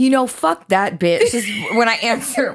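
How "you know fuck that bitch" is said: put-on angry voice, higher pitch. Retelling a phone call from Will: imitating an angry Will. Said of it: "he's hella mad".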